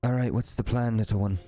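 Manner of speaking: hushed, whispered voice. Voicing an elf sneaking into a cave beside a player: whispering. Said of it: "whispers to you".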